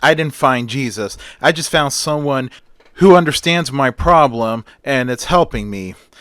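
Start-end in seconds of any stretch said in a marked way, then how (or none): none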